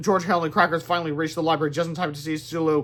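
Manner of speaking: plain reading voice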